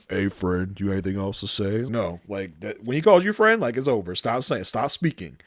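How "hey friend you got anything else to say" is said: lowered voice, ominous, tense and threatening. Imitating Lamont walking up to a man during questioning, in a low voice. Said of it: "low voice".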